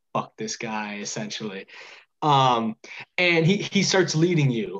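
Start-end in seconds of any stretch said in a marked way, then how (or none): 0.1-0.9 muttered under breath, much quieter and lower. A game master voicing a character who leads the players, muttering under his breath. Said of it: "mutters under his breath".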